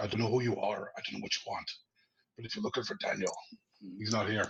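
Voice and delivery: put-on low, growling voice with Northern Irish accent. Retelling own words to an intruder at three in the morning: growling Northern Irish accent. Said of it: "it's a bit of a growl".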